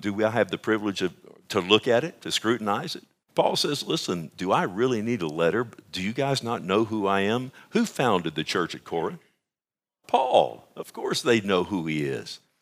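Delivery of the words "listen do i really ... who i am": ordinary talk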